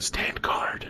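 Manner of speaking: whispered. As the other player passes by during the game, speaking in a whisper. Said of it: "I'm gonna whisper".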